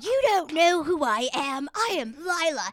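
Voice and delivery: put-on angry, loud, drawn-out drunken yell. Retelling a drunken argument at a club: retelling own drunken yelling. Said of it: "yelling at Jeff".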